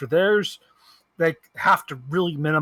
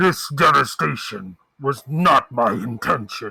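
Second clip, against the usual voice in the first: deep, slow, robotic machine voice; 3 semitones lower, 4 dB louder than usual. Wishing for a voice changer, the speaker reads a line in a deep, mechanical voice. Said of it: "has a really deep and mechanical voice".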